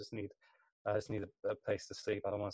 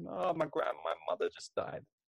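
mock, high sobbing through every word; 8 semitones higher than usual. Recalling a crying old man who came up at Romford station, imitating a man crying. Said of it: "he was crying like mad".

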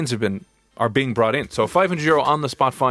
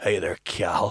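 low, soft voice in a Northern Irish accent; 4 semitones lower, 5 dB quieter than usual. Showing the other speaker how to say a name, using a Northern Irish accent. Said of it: "A Nordy".

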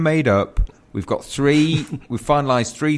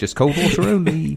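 muttered very quietly; 3 semitones higher than usual. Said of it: "Just say it very quietly".

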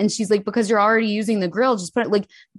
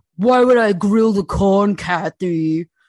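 mock scornful, nasty, condescending tone; 4 dB louder than usual. Doing an impression asked for by another speaker: imitating a husband, nasty and condescending. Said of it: "do an impression".

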